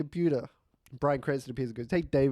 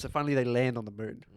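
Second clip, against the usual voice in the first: usual speaking voice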